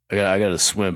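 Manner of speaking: deep voice dropped down low. Redoing a voice after being told to go deeper: deeper Michael Phelps voice. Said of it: "a deeper voice when it comes to answering".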